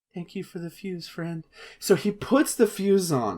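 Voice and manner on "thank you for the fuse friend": very soft, barely audible whisper. Retelling a game character's line while imitating a whisper. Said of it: "He even whispers".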